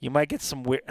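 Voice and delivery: slight squeak in the voice. Speaking on air, voice squeaking a little bit. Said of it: "my voice is squeaking there a little bit".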